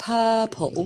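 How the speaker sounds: "purple" pronounced with a London accent. Showing how people in london say a word: london pronunciation of purple. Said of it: "we would say the colour purple, like this".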